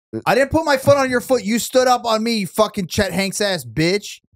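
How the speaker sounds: hostile, aggressive, cursing, snapping blow-up. Complaining to the person who stood on their foot, in an aggressive-sounding outburst. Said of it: "That sounded aggressive".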